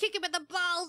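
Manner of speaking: acted, petulant, spiteful, vindictive whine. Recalling reacting to an annoying character while others watched peacefully: mock-whiny, vindictive. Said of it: "my whiny um vindictive self".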